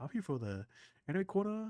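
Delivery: put-on very high-pitched British accent. Retelling how a guest greeted him: imitating a British accent. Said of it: "he says with an British, British accent".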